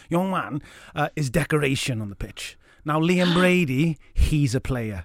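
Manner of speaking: slow, deliberate, measured, unhurried delivery. Retelling what a football manager said of a player: Brian Clough impression. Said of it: "it's my best Clough impression".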